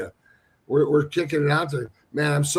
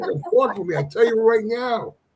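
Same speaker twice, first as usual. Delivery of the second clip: put-on New York accent, pitched up; 7 semitones higher than usual. Speaker shows he can put his new york accent back on, put-on new york accent. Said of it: "That's it".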